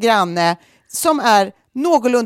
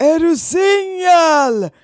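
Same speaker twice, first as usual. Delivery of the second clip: mock calling out, high shout, single drawn-out; 7 semitones higher than usual. Retelling how a woman called to a guy across the courtyard, retelling a shout across courtyard. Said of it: "Alltså skriker typ så här".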